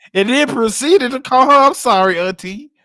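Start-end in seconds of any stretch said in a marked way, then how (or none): none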